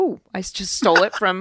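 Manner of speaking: ordinary talk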